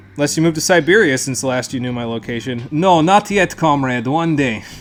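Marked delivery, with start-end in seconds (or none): 2.7-4.7 terrible put-on Russian accent, slow. Joking reply about Siberia in a terrible put-on Russian accent. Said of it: "That was the worst Russian accent you've ever heard".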